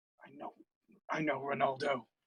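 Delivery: muttered quietly under breath. A player's character answers a familiar voice in their mind, muttering under breath. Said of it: "I just mutter under my breath".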